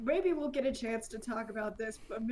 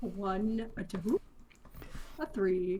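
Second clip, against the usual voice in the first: each number drawn out, very slow; 2 semitones lower than usual. Voicing the owl counting his licks: Mister Owl voice. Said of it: "I don't know how you do that voice so well".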